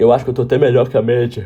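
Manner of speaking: speaking while yawning, mid-yawn. Talking about own progress, speaking through a yawn. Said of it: "Desculpa o bocejo aí".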